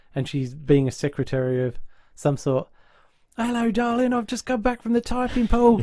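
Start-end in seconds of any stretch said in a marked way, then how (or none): 3.4-5.8 put-on working-class English accent, pitched higher. Retelling a sitcom scene as the secretary character: Julie's common accent. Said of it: "she's got this brilliant common accent".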